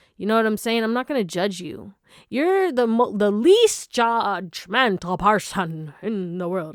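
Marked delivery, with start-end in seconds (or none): 2.3-6.8 very slow, drawn-out vampire accent, every word stretched. A speaker addressing the audience accidentally slips into sounding like Count Dracula. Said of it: "Why do I sound like Count Dracula".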